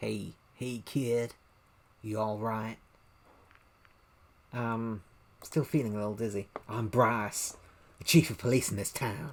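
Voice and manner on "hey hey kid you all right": put-on, slow Southern American drawl. Reading a police chief's line in a game, trying out a Southern accent. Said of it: "Or how about Southern?".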